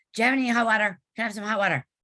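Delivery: rushed mumble, put on. Retelling how a tourist asked a worker for hot water: imitating a fast mumble. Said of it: "mumbled it, and he said it really fast".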